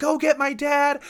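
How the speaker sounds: acted-out yell. Retelling how she yelled out the window at the officer, retelling a yell. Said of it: "out the window yelling at the officer".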